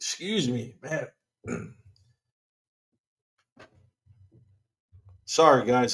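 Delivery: choking up a little. A host apologizes to listeners mid-show, choking up a little. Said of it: "I'm over here choking up a little bit".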